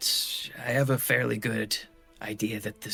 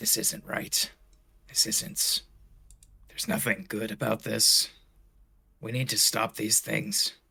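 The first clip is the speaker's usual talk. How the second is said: muttered under breath, slower. Narrator voices Malachi walking away, muttering under his breath. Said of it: "he's going to like mutter under his breath".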